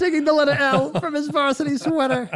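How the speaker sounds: very high-pitched narrator voice. Quoting a line from an old children's show: Joan Rivers voice. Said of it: "It's Joan Rivers as the narrator".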